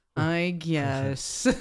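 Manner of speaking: put-on unhappy voice. Quoting Eeyore answering the group's invitation: Eeyore voice. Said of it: "He goes".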